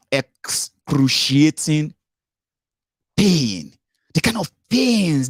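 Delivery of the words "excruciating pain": slow careful delivery, higher. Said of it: "I have to say that slowly".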